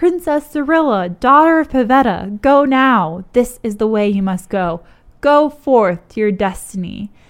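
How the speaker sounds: loud shout. Retelling a game scene, quoting one character calling to another: acting out a shout. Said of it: "So Nemu shouts out".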